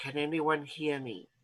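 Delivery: breath-only, hushed, soft half-whisper. A character half-whispers into it, checking whether anyone hears: half-whispering. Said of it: "going to whisper into it".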